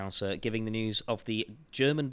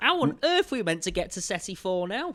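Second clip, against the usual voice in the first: put-on high, loud Northern accent. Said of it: "'Cause they're all Northern".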